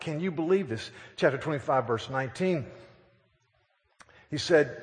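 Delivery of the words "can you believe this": ordinary talk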